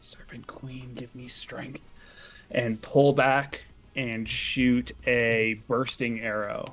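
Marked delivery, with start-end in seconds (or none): 0.0-1.8 whispered under breath, quieter and faster. Speaking as his character just before taking a longbow shot, whispered under breath. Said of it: "he's going to whisper under his breath".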